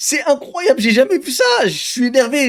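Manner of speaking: amused, giggling and laughing through the words. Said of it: "je le dis en rigolant".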